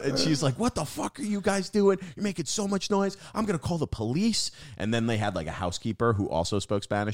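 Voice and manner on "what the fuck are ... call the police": mock, very high, shrill shrieking and screaming rant. Retelling how a lady threatened to call police: imitating a lady screaming. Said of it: "and she screams".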